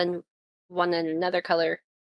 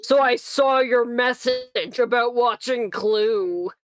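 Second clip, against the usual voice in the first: dark, gravelly, loud demon man voice, very slow; 5 semitones higher, 6 dB louder than usual. Imitating how the other speaker's distorted audio sounded: dark gravelly demon voice. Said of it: "does it sound really dark and gravelly, like some sort of demon man".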